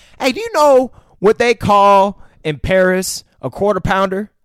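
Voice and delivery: very loud rural Southern voice. Act out a man rambling on, as a redneck-voiced Samuel L. Jackson. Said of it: "You're doing a redneck voice".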